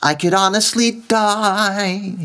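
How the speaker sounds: pinched, very high New York voice, "die" stretched out. Demonstrating the first way the phrase is delivered, in Miss Adelaide's pinched New York voice. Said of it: "in that pinched New York voice".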